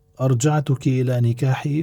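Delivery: ordinary talk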